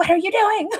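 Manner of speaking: very high, indignant, angry outburst. Speaker acts out watching a movie character, reacting mock-angry. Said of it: "jumping my my popcorn all angrily too".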